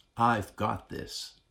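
in a whisper. Telling listeners what god whispers to them, whispering. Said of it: "He's whispering".

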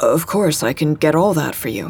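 ordinary delivery

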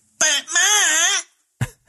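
very high, loud cartoon voice, "ma" drawn out. Getting high enough to do one phrase: Cartman voice.

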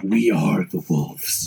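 theatrical whisper. Narrating a scene, Marlon Brando half-whispering in the background: Marlon Brando half-whisper. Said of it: "whispers in the background".

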